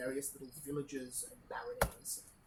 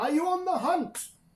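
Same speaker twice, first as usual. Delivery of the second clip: loud hailing call, higher and louder; 16 dB louder than usual. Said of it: "calls to you as you get".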